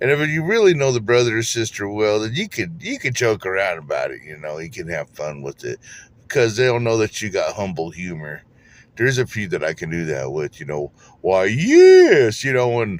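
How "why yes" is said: booming, loud, high, haughty, pompous king drawl. Speaker shows the voice he uses to joke with people he knows well, mock arrogant king voice. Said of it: "I make a fun of someone that's like an arrogant king".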